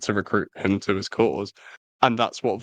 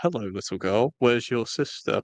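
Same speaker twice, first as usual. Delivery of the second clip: clearly fake, falsely sweet, put-on gentle softness. Retelling how Silco approaches a girl with a knife, Silco's clearly fake gentle voice. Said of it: "Putting on like a very clearly fake voice".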